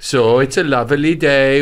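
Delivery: attempted Welsh accent, Welsh-sounding speech. A speaker tries out a welsh accent for listeners, saying a simple pleasantry in a welsh accent. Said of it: "my Welsh can sound like Indian".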